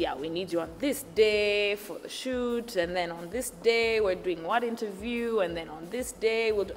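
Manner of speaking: normal talking voice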